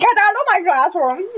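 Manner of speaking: high, yelled, teacher-like shouting. Imitating a teacher yelling at the speakers: imitating Mister Cornwall yelling. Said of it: "would be yelling at us".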